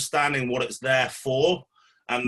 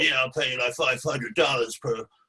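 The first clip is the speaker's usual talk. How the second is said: imitation American accent. Retelling what a man offered to pay the speaker, in a put-on American accent. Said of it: "I'm going to give it an American accent".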